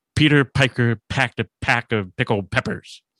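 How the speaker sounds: exaggerated hard popping plosives on p into mic. Demonstrating a plosive into the mic for the listeners, hard popping plosives. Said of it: "intentionally do a plausitive here".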